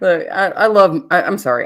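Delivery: ordinary delivery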